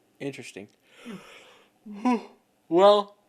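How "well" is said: loud, high yawn through the word. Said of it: "and then immediately yawn".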